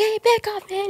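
very high-pitched, soft-toned voice. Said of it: "He has a soft voice".

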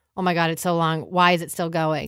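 ordinary delivery

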